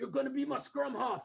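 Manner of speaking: put-on South African accent. Quoting a childhood friend's father talking to you at ten, in a south african accent. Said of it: "his father in a South African accent said".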